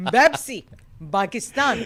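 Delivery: put-on Arabic accent. Joking with a co-host about words said in an arabic accent, arabic accent. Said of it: "how you say Popeyes in Dubai in the Arabic accent".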